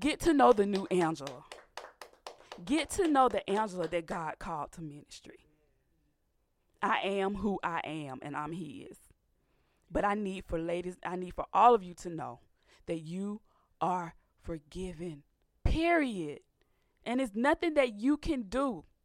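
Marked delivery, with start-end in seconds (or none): 0.0-9.0 getting choked up partway through. Speaker addressing listeners about being called to ministry, choked up. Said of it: "I'm getting choked up".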